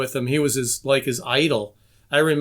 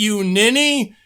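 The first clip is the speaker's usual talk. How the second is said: higher, mild mock yell, snapped. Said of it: "he yelled at".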